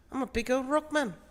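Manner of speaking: very high-pitched New Zealand accent, slipping toward island accent. Showing how they lock into a New Zealand accent, doing Korg. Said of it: "for my New Zealand accent, I lock in by doing Korg".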